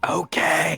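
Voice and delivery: bad failed whisper. Voicing a character in a library: weird failed whisper. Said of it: "weird whisper where it's just like".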